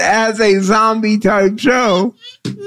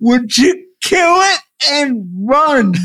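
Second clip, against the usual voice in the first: mild, mock-urgent yelling; 3 semitones higher than usual. Retelling watching the third episode at home: retelling screaming at the tv. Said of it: "screaming in my living room".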